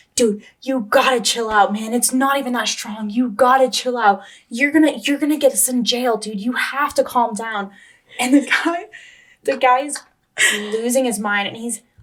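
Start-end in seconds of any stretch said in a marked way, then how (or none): 0.1-7.7 dude-heavy college frat bro voice. Retelling how a friend told a man losing his mind: imitating frat bro Kyle. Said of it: "the other guy was like".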